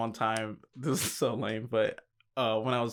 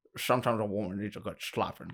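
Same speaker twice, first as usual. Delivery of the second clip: put-on Scottish accent. Showing a friend an impression: Sean Connery impression. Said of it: "This is my Sean Connery".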